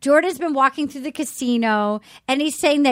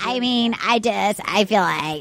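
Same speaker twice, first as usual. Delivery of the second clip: slow, dragging, creaky vocal fry drawl; 4 semitones lower than usual. Imitating a man who talks with vocal fry. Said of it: "he's got vocal fry".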